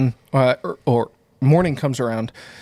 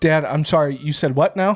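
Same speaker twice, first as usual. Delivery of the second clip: ordinary talk, nothing marked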